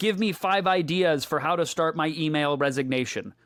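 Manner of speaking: plain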